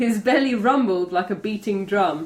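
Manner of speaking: ordinary delivery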